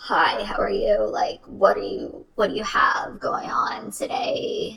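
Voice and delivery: frog-like voice impression. Describing a man's voice, demonstrating how he sounded, in a frog-like voice. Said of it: "it kind of sounded like a, a frog voice".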